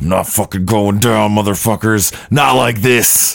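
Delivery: acted-out pure-rage cursing outburst, furious and defiant. Act out for the others how he would refuse to die, imitating pure rage. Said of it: "he's gonna be like".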